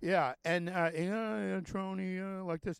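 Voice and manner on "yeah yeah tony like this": put-on lawyer voice, droning and pitched higher. Showing a listener how a lawyer talks: Schlesinger's droning voice. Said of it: "that's how Schlesinger talks".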